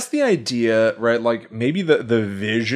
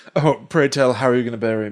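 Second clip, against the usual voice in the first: ordinary delivery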